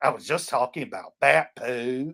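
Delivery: grumbled as a sour aside. Retelling a man in a church who turned around, imitating a mutter under his breath. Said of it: "mutters under his breath".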